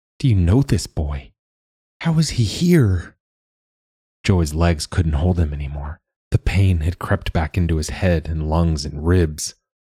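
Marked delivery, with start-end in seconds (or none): 0.2-3.2 high, unsteady, wobbling voice. A narrator reads a woman's questions after her spell breaks, wavering voice. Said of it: "she asked in a wavering voice".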